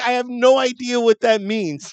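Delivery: very high-pitched, slow, drawn-out, frustrated exasperation. Retelling own reply to a confusing order: retelling own frustrated reply. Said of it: "'cause I was frustrated with them".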